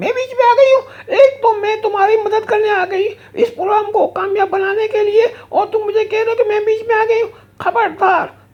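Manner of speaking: female bear puppet character voice. The lady bear puppet scolds the show's host, female bear puppet voice. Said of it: "lady beer ہوتی ہے female beer".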